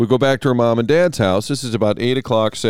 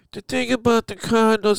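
high, pinched-nose nasal twang; 11 semitones higher than usual. Retelling trying an impression at work after advice to sound more nasal; pinched-nose nasal voice. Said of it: "I pinch my nose".

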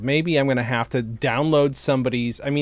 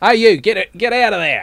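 mock Australian accent, much higher, louder; 7 semitones higher, 8 dB louder than usual. In a joking exchange, one speaker imitates an australian accent. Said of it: "That's Australian".

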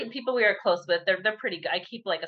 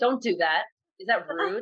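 put-on quiet, scolding tone; 2 semitones higher than usual. Retelling scolding another child on the playground, imitating own quiet scolding. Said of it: "start talking very quietly".

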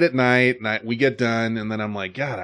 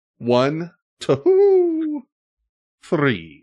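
high, swooping cartoon owl voice; 6 semitones higher than usual. Recalling the old candy commercial, doing a Tootsie Pop owl impression. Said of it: "Dead on impression of that fucking owl".

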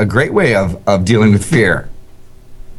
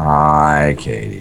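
dropped, very low, soft, serious voice. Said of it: "the voice dropped and it became so serious".

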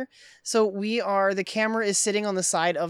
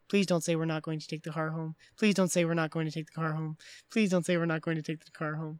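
put-on mutter, lower pitch and quieter; 3 semitones lower, 4 dB quieter than usual. Retelling a film scene, voicing Cameron as he is heard, imitating Cameron muttering. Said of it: "we can hear him muttering".

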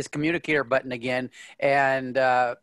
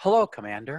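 put-on ship's computer voice. Voicing the ship's computer answering a call: M P Prime computer voice. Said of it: "the ship's computer, M P Prime, says".

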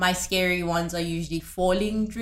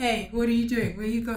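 steady, unhurried, very calm, even dad voice; 4 semitones higher than usual. Speaker reenacts their dad questioning their brother at night, imitating dad speaking very calmly. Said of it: "Very calmly".

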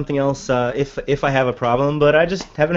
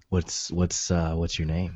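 fake seductive voice dropped very low in pitch; 10 semitones lower, 11 dB quieter than usual. Answering a request to hear a sexy voice: put-on sexy voice. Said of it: "Let's hear your sexy voice".

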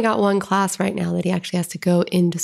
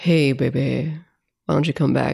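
seductive, deep, low sexy man's voice; 4 semitones lower than usual. Describing a masculine phone sex voice to the others, deep sexy man voice. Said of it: "sexy man voice that's like the deep".

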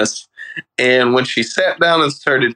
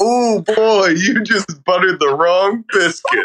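high, indignant, offended tone; 5 semitones higher than usual. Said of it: "act like the, uh, sandwich insulted her".

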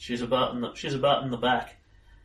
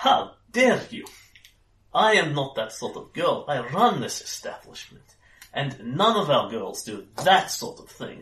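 indignant, scandalised, affronted, outraged outburst; 2 semitones higher, 4 dB louder than usual. The woman who runs the establishment slaps you and scolds you: indignant outburst. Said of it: "She slaps you as hard as".

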